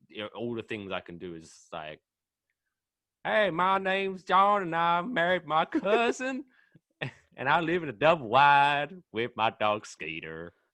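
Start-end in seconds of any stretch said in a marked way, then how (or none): 3.2-10.4 very loud, slow, terrible fake American accent. Asked to do an American accent, the speaker shows the only one they can: bad American accent. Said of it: "Whenever anyone asks me to do an American accent".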